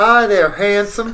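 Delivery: put-on Southern accent in belle style. Reading a part aloud in a group script reading, southern belle voice. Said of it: "You go with the southern voice".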